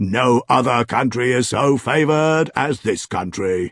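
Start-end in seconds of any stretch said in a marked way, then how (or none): none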